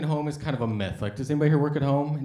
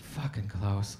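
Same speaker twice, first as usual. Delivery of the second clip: put-on fed-up policewoman tone, lower, quieter; 6 semitones lower, 7 dB quieter than usual. Retelling how a policewoman spoke to her colleague Klaus, mock-fed-up policewoman. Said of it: "sick of his shit".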